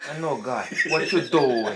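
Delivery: very loud, forced New York Italian accent. Showing how actors in mafia films force an accent, forced New York Italian accent. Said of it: "ils forcent un accent italien de New York".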